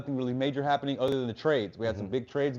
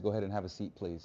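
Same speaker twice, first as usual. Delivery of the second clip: put-on whisper, lower and quieter; 6 semitones lower, 11 dB quieter than usual. Retelling what a hypnotist said to him: imitating a whisper. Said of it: "he whispers to me".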